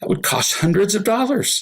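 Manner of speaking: acted bitter, high, angry sarcastic tone. Speaker quotes his partner's reply about the cost; mock-angry sarcastic retort. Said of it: "she could not say this sentence without being angry".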